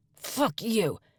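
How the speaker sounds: high hiss through gritted, clenched teeth. Narrator, being hurt by a man with a knife, hissed through clenched teeth. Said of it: "I hissed between clenched teeth".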